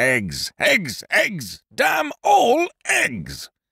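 overwrought, worked-up, very high rising cry. Lord Warpleston lifts the first breakfast cover and exclaims, overwrought voice. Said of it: "in an overwrought sort of voice".

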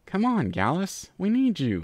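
high, drawn-out crying out. A narrator reads Sandbar calling to Gallus after he tumbles back, crying out. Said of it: "Sandbar cried".

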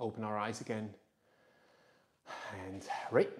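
soft, low, hushed, calm guiding voice.

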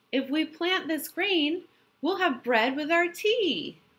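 high, squawking barnyard hen voice. Narrator reading the hen speaking to the other animals, squawking Little Red Hen voice. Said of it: "she squawked to the other animals".

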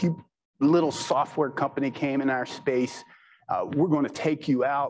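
ordinary talk

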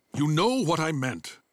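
growling in frustration. Caught out on a technicality about listening to a match, frustrated growl.

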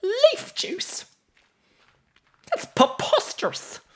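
high, squeaky British voice. Describing how Mr. Whiskers' voice has changed, demonstrating the current Mr. Whiskers voice. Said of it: "higher, squeakier British voice".

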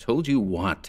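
plain

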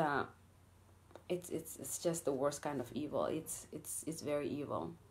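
low, very quiet, holding back emotion. Speaker saying something has to stop, holding back emotion. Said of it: "I'm trying not to get emotional about this".

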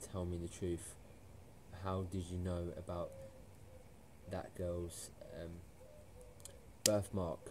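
ordinary delivery

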